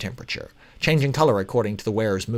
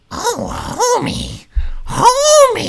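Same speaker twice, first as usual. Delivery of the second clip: very high, loud, shrill cartoonish voice; 6 dB louder than usual. Trying out a Marge Simpson impression: fake cartoonish Marge Simpson voice. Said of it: "Marge Simpson".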